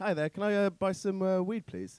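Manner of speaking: put-on posh accent. Retelling phoning a drug dealer to buy weed, in a posh voice. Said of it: "I suffered from an affliction known as posh voice".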